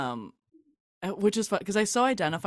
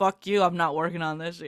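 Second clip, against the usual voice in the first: ordinary delivery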